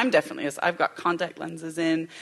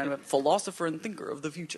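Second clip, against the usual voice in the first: exaggerated, larger-than-life put-on American accent; 5 dB quieter than usual. Repeating a description of a thinker: big American accent. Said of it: "put on, like, a big American accent".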